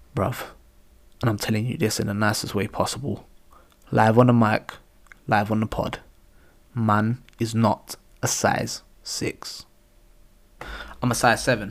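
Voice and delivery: voice dropped low, right up on the mic. Speaker leans close to the mic live on the podcast, lowered voice, close to mic. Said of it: "I'm going to lower my voice right now".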